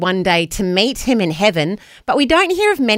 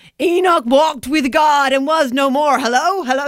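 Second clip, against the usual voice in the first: put-on American accent with raised pitch; 7 semitones higher than usual. Repeating what Murray always says when given a sermon line, as Murray in a put-on American accent. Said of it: "that's my American accent".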